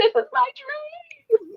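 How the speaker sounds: very high, very slow, sassy drawn-out yell. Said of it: "Probably yell at you".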